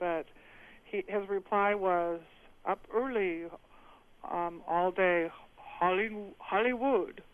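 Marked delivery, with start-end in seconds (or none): 2.7-7.1 poorly done put-on Chinese accent, much slower. Retelling the grandfather's reply when asked what he was doing: not-so-good Chinese accent. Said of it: "I don't necessarily have a good Chinese accent".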